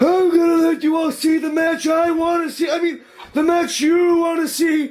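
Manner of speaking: stumbling, then self-correcting. Retelling a line botched in the ring: imitating Laurinaitis botching a line. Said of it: "he came out to the ring and was just like".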